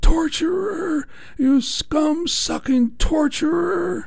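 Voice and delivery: very high, shrill, drawn-out, huge yelling outburst. Recalling a woman shouting at a judge after an appeal hearing, imitating a woman yelling. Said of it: "yelled out in a really large voice".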